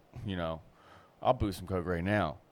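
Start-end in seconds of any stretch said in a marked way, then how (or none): none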